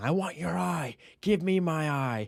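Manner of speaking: put-on high, slow, drawn-out jeering yell. Retelling a scene where a rider chases another on a dragon: imitating Aemond shouting. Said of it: "Aemond is laughing and shouting".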